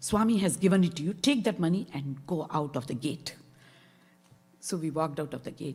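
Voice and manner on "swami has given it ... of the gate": mock domineering, authoritative, commanding tone. Retelling what an old man said to them at the gate: imitating a dominating voice. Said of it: "kind of in a very dominating voice".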